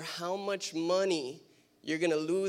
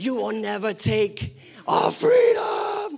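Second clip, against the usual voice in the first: loud, full-throated, swooping battle cry; 6 semitones higher, 10 dB louder than usual. Preaching a call to arms, imitating William Wallace: William Wallace Braveheart voice. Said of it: "I feel like Braveheart, William Wallace".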